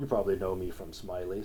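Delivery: very deep, quiet, hushed character voice. Continuing the bit: Keith David impression. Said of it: "my great Keith David impression".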